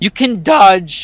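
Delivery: slow delivery, voice breaking partway through. Talking about dodging enemies in the game, with a major voice crack. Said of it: "Sorry, major voice crack".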